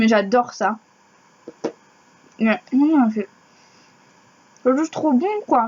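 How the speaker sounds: speech muffled by chewing. Tasting calissons, she talks with her mouth full. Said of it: "Désolée, je suis sur la bouche pleine".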